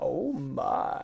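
deep, creaky exclamation tone. Showing what the other speaker's voice was like: George Takei voice. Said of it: "like George Takei".

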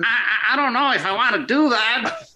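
high, hesitant, imitated voice. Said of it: "I love the impression".

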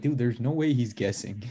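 ordinary delivery

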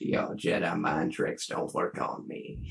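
breathy, half-whispered voice, breathed out, nearly whispering. Doing an impression of a Watto line: Matthew McConaughey voice. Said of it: "That was Matthew McConaughey, a hundred percent".

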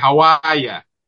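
speaking in a Boston accent. Showing how people talk where the speaker grew up: Boston accent. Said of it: "I'm from Boston, so I'm like".

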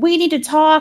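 yell, pitched high. Recounting a story, a man answers a woman who told him to leave; retelling a yell. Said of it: "And he like yells back".

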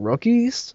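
incredulous, high-pitched and drawn out.

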